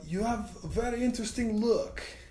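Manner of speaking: put-on Russian accent, pitched very high. Retelling what a guy at a show said to the speaker, russian accent. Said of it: "this sounds like a Russian accent".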